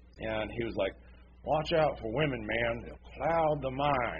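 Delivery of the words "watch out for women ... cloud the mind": unhurried, plodding, slow, drawn-out talking. Retelling a slow-talking mechanic's line from a war movie; slow-talking mechanic impression. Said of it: "kind of talks slow".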